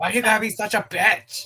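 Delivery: mock yelling. Joining in on how a video maker yells at her emu: imitating someone yelling. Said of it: "she's always yelling at it".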